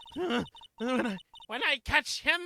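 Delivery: put-on old woman voice. Voicing an old woman character in a game: old bag voice. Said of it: "old bag voice".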